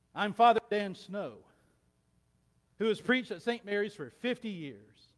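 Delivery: booming, very loud, high preacher's sermon voice. In a joke, a priest announces himself to st. peter, booming preacher's voice. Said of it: "boomed in a preacher's voice".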